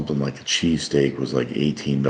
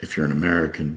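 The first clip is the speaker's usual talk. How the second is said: plain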